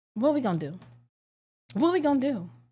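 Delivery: mock panicked, frantic, freaking-out delivery. Retelling being stranded with a dead phone: retelling own panic. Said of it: "I'm freaking out".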